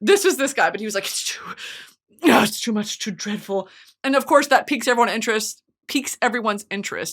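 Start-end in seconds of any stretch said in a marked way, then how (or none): 1.0-3.7 breathy, sighing, dramatic reluctant whisper with dread. Retelling a book character teasing a dreadful story: imitating attention-seeking reluctance. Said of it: "they want you to ask what's wrong so bad".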